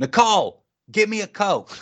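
put-on very high shriek. Telling a story about someone, acting out his sudden scream. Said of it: "David just screams out".

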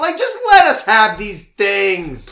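put-on ranting shout. Complaining about people taking away beloved characters: mock yelling political talking points. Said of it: "Please stop yelling conservative talking points".

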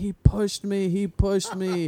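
high, drawn-out sobbing scream, words barely getting out. Retelling what he screamed when the teacher ran over: imitating him screaming while crying. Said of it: "he immediately starts screaming".

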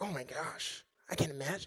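very soft, horrified sigh under the breath. Describing how listeners should have reacted: imitating a sigh. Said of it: "you didn't sigh like".

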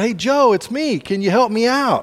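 mock calling out. Telling a story, the guy in the hole calls to his friend, calling out from the hole. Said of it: "so the guy calls out".

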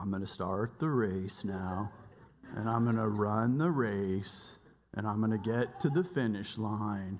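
slow, deep, plodding, stretched-out tortoise voice. Speaker retells the tortoise at the start of the race, in a tortoise voice. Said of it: "I remember he sounded like".

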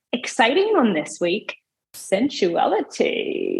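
slow, swooping, drawn-out sexy voice.

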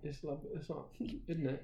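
whispered, hushed, breathy put-on British accent. Trying out accents after being told one was bad: British accent. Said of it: "I could do like a British accent".

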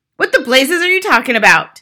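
shouted outburst. The father answers his wife's accusation, yelling. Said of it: "the father yelled".

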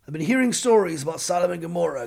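ordinary delivery

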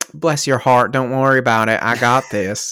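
put-on loud, high-pitched, sugary, syrupy Southern accent. Voicing a character reassuring a party member with a sickly sweet Deep South manner. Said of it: "Deep South smiles".

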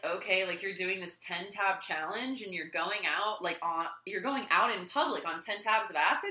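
ordinary talk

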